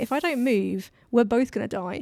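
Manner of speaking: normal talking voice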